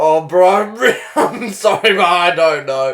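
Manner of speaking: mock placating, overly apologetic tone. Acting out how the other speaker might apologize to a drug dealer: acting out a sorry apology. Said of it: "that real, like, sorry shrug".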